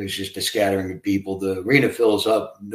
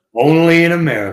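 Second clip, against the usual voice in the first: belted out badly, loud and high; 8 semitones higher, 8 dB louder than usual. Giving a hint about a guest in a bad Don King impersonation. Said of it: "that was a really bad Don King impersonation".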